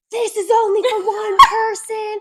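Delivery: acted screaming. Retelling how a worker yelled at the bathroom door: imitating a worker screaming. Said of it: "she started screaming at me".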